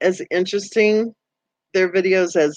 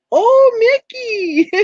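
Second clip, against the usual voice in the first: put-on very high, loud, gushing, doting baby talk; 5 dB louder than usual. Describing a woman talking to her dog Mickey, imitating her mommy voice. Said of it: "she turns into her mommy voice really fast".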